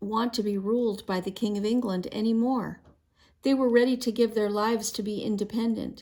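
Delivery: ordinary delivery, nothing marked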